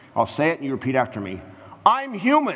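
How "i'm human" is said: very high, ringing, proclaiming tone. Leading a congregation to repeat after: declaring. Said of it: "I want you to declare this".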